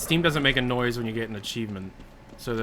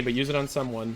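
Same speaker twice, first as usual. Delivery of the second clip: ordinary delivery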